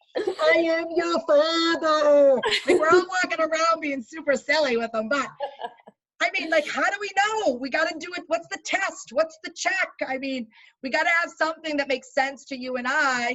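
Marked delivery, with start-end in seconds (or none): 0.2-2.4 loud, very slow booming delivery. Joking about own breathing and fogged-up glasses: Darth Vader voice. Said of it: "I'm Darth Vader".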